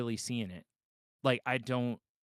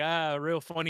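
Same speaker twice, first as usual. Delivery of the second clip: mock sarcastic laugh running through the words; 4 semitones higher than usual. Acting out the other speaker opening a flea card: imitating someone laughing sarcastically. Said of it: "you're laughing like".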